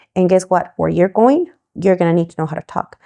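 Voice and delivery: ordinary talk, nothing marked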